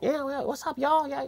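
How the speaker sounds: very high-pitched, grating, annoying caricature voice. Imitating a stereotyped film character's line: imitating an annoying high-pitched voice. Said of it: "has a high-pitched and, like, yeah, really annoying".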